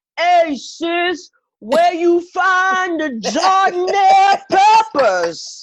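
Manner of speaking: very loud, high, drawn-out holler. Retelling a shopper calling across checkout lanes: imitating someone yelling. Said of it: "you ain't gotta yell over three lanes".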